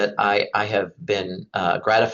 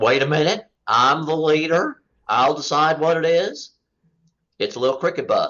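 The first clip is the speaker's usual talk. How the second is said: poor, high-pitched put-on cartoon hound dog voice; 6 semitones higher than usual. Retelling a joke, the leader hound dog insisting: poor impersonation of hound dogs. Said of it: "sorry for the poor impersonation of two hound dogs".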